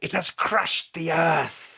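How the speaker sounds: very high shout. Narrator voices the injured Trevgar after the star lands, yelling. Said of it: "And he yells out".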